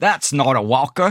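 put-on, attempted Australian accent. Retelling an old man with a walker at a nursing home, in an attempted australian accent. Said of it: "Was that a good Australian accent?".

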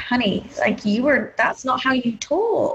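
usual speaking voice

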